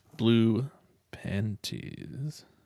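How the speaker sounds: slowed-down delivery. Told to say it slower next time, repeating the phrase: said slower. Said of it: "Say it slower next time".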